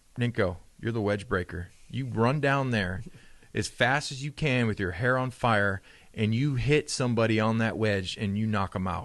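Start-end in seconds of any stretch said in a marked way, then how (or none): none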